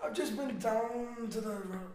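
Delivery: high-pitched, loud, slow mock Scottish accent. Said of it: "How about Scottish?".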